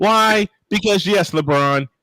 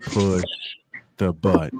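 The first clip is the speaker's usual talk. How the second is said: slow, deliberate, drawn-out, word-by-word delivery; 10 semitones lower, 6 dB quieter than usual. Retelling how someone repeated a line: imitating slow speech. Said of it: "he just said it slowly".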